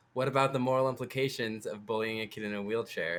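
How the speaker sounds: usual speaking voice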